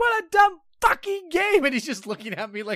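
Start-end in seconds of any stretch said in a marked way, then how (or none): 0.0-1.6 shrill, high-pitched, loud yelling. Retelling yelling in someone's face over a game, acting out the yell. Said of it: "start yelling in charlie's face".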